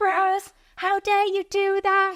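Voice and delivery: mock outraged, furious shriek, very high. Retelling when her little sister peed in her bed: imitating her own furious screaming. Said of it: "I was furious and I was screaming".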